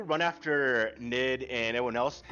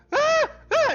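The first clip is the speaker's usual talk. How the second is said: put-on shrill, very high, loud ten-year-old girl voice; 9 dB louder than usual. Voicing a girl pointing at the ground: ten-year-old girl voice. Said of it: "in a ten-year-old girl voice".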